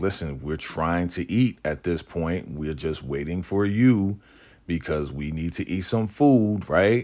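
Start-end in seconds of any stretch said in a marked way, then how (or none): none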